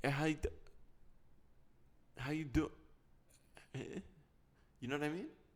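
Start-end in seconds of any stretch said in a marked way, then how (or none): 0.0-4.0 trailing, low-energy mumble cutting out halfway. Imitating someone greeting with no energy: imitating a voice cutting out. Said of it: "it's like their voice cuts out".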